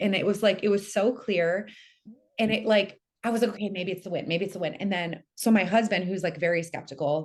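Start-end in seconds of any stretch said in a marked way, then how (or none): none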